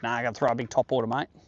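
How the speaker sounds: put-on broad Australian accent. Retelling what Greg would say about fishing: imitating Greg's strong Australian accent. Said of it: "his accent was more Australian than all of us".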